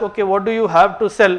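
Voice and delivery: plain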